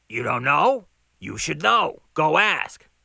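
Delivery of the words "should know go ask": ordinary delivery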